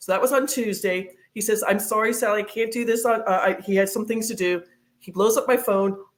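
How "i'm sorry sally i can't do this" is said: plain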